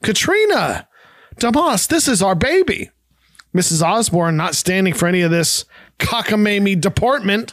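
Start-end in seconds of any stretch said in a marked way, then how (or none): 0.0-2.9 gasp bursting into a high shout. Reading a story aloud, a mother suddenly sees her baby: gasping shout. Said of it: "She gasps and shouts".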